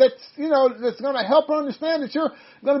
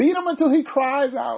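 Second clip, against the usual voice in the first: ordinary delivery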